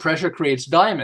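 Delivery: ordinary talk, nothing marked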